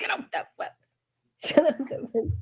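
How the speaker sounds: whispered, hushed, breathy Irish mother voice. Teaching the irish way a mother gets you out of bed: imitating an irish mother. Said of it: "That's what we say".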